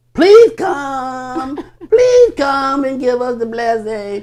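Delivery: high, whiny, wheedling pleading with come drawn out. Mocking people who pray and beg every Sunday: imitating whiny begging. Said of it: "they begging and begging and begging".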